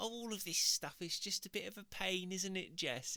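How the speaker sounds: put-on high Cockney accent, full of sass. Retelling a customer in her nineties who came into the shop, in a Cockney accent. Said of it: "it's like Cockney accent".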